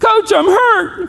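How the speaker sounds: very high-pitched shouting yell. Retelling answering the coach from the ground: retelling own yell. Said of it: "And I yelled".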